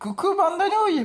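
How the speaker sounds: very high, shrill, squeaky squealing voice. Offering to do someone's voice, then doing a very high-pitched voice. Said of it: "une voix suraiguë qui fait des".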